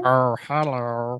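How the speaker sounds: soft, goofy, silly made-up funny voice. Podcast host opens an episode with a greeting: silly funny voice. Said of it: "I just felt like making a funny voice".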